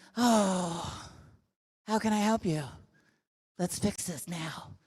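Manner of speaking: gentle, sympathetic little tone, soft, slow, put-on empathy. Showing how to get others to fix problems: put-on empathetic tone. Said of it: "put on your little empathetic".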